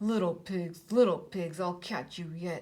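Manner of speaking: low, muttered, threatening wolf voice. Narrator reading a story, the fooled wolf creeping away; wolf muttering to himself. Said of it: "he crept away muttering to himself".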